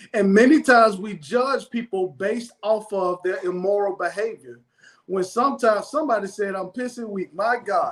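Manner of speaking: ordinary talk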